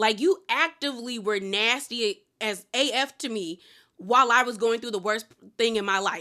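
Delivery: ordinary delivery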